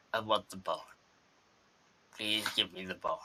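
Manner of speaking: very soft, hushed, low little chihuahua voice. The storyteller voices a chihuahua in a little girl's handbag: talking chihuahua voice. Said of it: "And a 6-year-old girl walks in with a chihuahua in a handbag. ... And the dog says, / He tries to get out of the purse".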